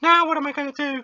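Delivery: put-on very high, loud, comic funny girl voice. Reading a game character's dialogue aloud, the speaker uses a funny girl voice. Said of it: "I was trying to find a funny girl voice".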